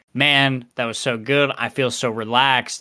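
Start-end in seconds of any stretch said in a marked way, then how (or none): none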